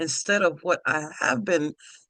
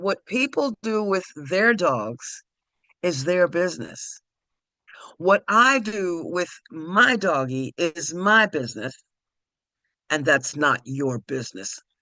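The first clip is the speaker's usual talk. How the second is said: the sweetest possible voice, slow. Retelling own reply to the woman on the phone: retelling own words, sweetly. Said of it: "the sweetest way I could say it".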